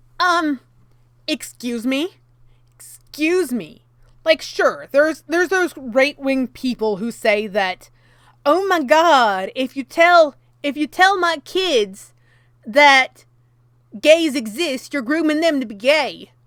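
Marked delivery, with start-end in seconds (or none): 8.5-16.2 put-on American Southern US accent. Mocking what some right-wing people say, in a put-on Southern accent. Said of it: "I don't know why I did that that accent".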